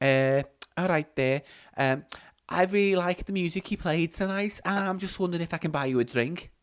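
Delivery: slow put-on woman's voice, taking her time. Acting out a new lady offering the DJ a drink: another put-on lady voice. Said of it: "another voice".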